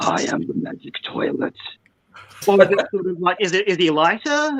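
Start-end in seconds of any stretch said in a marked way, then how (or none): 0.0-1.5 very deep, breathy whispered character voice. Trying out voices for a magic toilet character: very deep magic-toilet voice. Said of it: "even deeper voice than that?".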